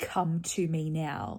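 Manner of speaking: put-on loud commanding voice. Retelling a moment where Verity calls out to Fitz: retelling Verity's loud command. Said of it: "in a very loud voice".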